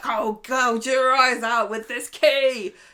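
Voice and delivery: very loud, slow, drawn-out, high voice. Retelling a scene where an attacked woman threatens him back: imitating Leanne threatening. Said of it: "she's like".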